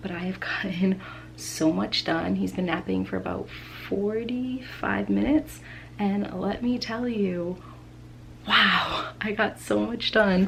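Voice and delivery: whispered, hushed, kept right down. Speaking while Landon naps in the connected bedroom: whispering. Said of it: "I am whispering because Landon is sleeping".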